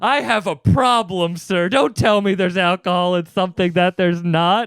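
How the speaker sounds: mock dramatic indignation. Retelling storming off at a store clerk: retelling own dramatic outburst. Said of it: "and I get real, uh, dramatic".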